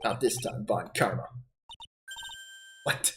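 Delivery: put-on German accent. Voicing a courtroom game scene aloud, german accent. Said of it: "my German accent may have something to be done".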